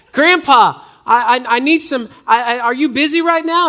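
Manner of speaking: put-on young rural southern voice. Retelling a phone caller claiming to be his grandson, in a younger southern hick-ish accent. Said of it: "younger voice with kind of a southern kind of hick-ish accent".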